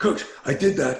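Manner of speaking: put-on, worked-up, excited, dramatic, high blurt. A coach acts out Carl's phone call, imitating Carl's excited speech. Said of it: "He's all like dramatic and excited".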